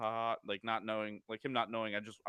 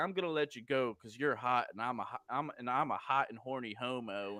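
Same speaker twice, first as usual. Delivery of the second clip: put-on menacing, threatening-sounding tone. Retelling what a stranger said to the speaker: imitating a menacing threat. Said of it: "as if he's like, if he didn't let me go, he was gonna do something to me".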